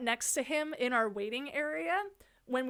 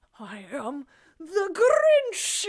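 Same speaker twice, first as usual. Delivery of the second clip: loud, slow, high, swooping, drawn-out cartoon villain voice; 5 semitones higher, 8 dB louder than usual. Asked his name at the desk, he answers in a Grinch voice. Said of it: "like that".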